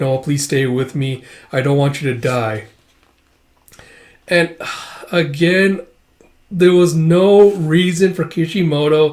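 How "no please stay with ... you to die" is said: ordinary delivery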